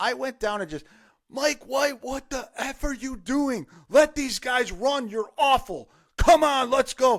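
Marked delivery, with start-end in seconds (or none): 1.3-7.2 put-on, high, furious screaming rant, fed-up sounding. Retelling yelling at the coach from the tenth row: imitating own screaming.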